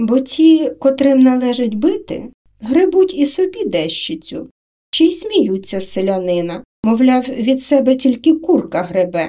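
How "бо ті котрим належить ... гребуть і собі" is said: ordinary delivery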